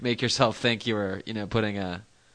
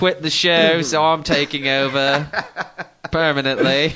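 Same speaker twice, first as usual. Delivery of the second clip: bad fake British accent, high and loud; 5 semitones higher, 6 dB louder than usual. Taking over the show as Wackily, the speaker uses a bad fake limey accent. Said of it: "that's like the worst fake limey accent I've ever heard".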